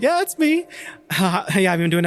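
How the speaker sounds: voice shooting up octaves. Retelling own reply on a phone call: imitating own voice going up three octaves. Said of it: "My voice went up, like, three octaves".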